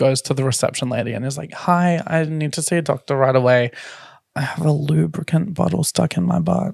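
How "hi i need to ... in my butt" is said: discreet, confiding, private-sounding tone. Retelling how he spoke to the emergency room receptionist, imitating a very quiet voice. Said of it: "as quietly as he possibly could".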